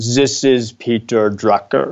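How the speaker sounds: put-on slow, deliberate Austrian accent. Retelling a voicemail from Peter Drucker, in his Austrian accent. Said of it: "I hesitate to try to mimic the Austrian accent".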